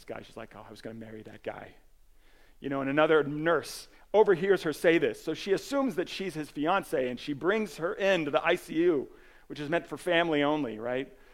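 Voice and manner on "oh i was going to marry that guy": under the breath, much quieter, lower. Retelling a film nurse watching a patient taken away, muttering under her breath. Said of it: "she just says under her breath".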